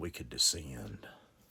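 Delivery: low, raspy, hard-to-catch mumble. Retelling what a stranger mumbled to a man offering him a ride: raspy mumble. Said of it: "mumbled in a raspy voice".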